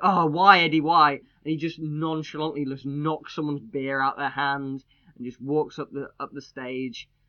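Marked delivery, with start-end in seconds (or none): 0.0-1.1 loud screaming from many voices. Retelling how the crowd reacted as he rolled out: imitating fans screaming. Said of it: "people are just screaming at him".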